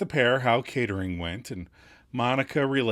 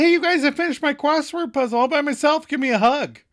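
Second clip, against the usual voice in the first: very high excited shout. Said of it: "Rachel spies them and shouts".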